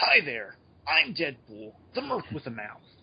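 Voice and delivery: scratchy-edged character voice. Showing a fan interpretation of the character's voice: scratchy Deadpool voice. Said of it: "maybe the voice is scratchy with the yellow box".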